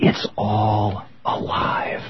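confiding, secret-sharing, conspiratorial, secretive voice. Retelling what a man said as he leaned over, imitating a conspiratorial voice. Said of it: "in this very conspiratorial voice".

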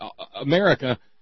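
normal talking voice

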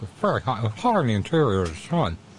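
talking with mouth full of food. Speaking while eating hot fried plantains from the kitchen, talking with mouth full. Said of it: "I've got it in my mouth".

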